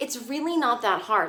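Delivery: normal talking voice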